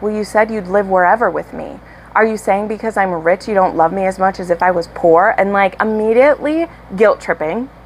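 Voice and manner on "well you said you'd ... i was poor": plain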